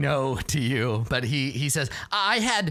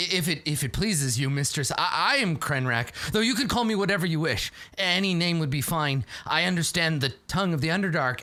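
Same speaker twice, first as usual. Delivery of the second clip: ordinary talk, nothing marked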